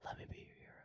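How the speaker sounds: soft, quiet, put-on ASMR-style whisper. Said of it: "It's such a quiet whisper, like it's an A S M R video".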